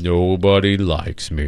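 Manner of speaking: low, mopey cartoon donkey voice. Told he sounds like Eeyore, the speaker shows what that would be, Eeyore voice. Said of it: "That would be more like".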